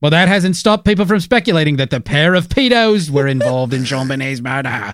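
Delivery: British voice reading in headline newsreader style. Rereading the sentence just read aloud: Robin Leach voice. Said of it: "should have read that like Robin Leach".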